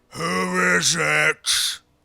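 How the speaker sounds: huge, booming, rough giant voice. Narrating the scene, a voice calls out from inside the hovel: big booming voice. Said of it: "you hear this big booming voice come out of the hovel".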